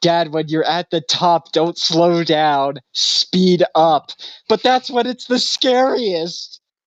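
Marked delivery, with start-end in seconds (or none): 0.0-4.1 urgent, drawn-out, only half-yelled mild call. Retelling a Simpsons movie scene, quoting Lisa: imitating Lisa Simpson yelling. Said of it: "Lisa was yelling at him".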